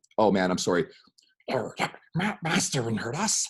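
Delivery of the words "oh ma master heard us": high, drawn-out creature voice. Showing off another impression after a different one, Smeagol voice. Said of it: "that's Smeagol".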